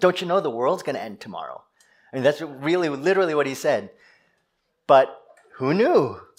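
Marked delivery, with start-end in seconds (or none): 0.0-1.6 sarcastic, with swooping intonation. Retelling what a cashier said to a customer: imitating a sarcastic remark. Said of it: "the cashier said with sort of this sarcasm".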